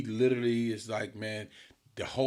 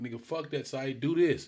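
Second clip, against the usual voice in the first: put-on yelling, higher; 4 semitones higher than usual. Retelling coaching from the stands during the game: imitating own past yelling. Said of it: "I'm yelling".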